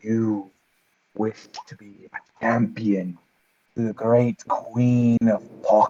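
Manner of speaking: hushed half-whisper in a creature voice. Narrator voicing a skull-like face in a dead tree, half-whispering tree face. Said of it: "and it whispers".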